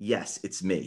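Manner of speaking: low, sinister villain voice. Retelling how an actor as Loki answered a kid: imitating Tom Hiddleston as Loki. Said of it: "he does that evil smile".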